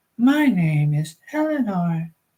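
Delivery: put-on tinny, slightly metallic, synthetic-edged young girl voice. Reading a story aloud, a speaking thing gives its name, slightly metallic young girl's voice. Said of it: "slightly metallic sounding version of a young girl's voice".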